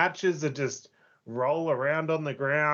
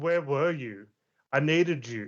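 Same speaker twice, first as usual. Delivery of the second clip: put-on angry, ranting tone. Retelling his translated promo flirting with the cameraman, in a mock-angry voice. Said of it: "but in a really angry voice".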